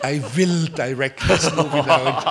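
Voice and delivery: loud, very bad German accent.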